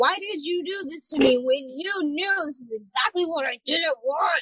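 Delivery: put-on crying tantrum. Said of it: "just crying and being like".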